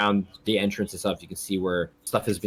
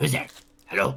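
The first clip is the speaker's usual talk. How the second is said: harsh, very raspy, pitched-up voice; 5 semitones higher than usual. Voicing someone calling out from inside, very raspy voice. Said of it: "so it's like a very raspy voice coming from inside".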